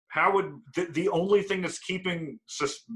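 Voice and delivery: high, almost-yelling voice.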